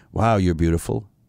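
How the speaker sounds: insincere, sarcastic-sounding. Demonstrating a man complimenting a woman in a bar: sarcastic-sounding. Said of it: "it sounded like he was being sarcastic".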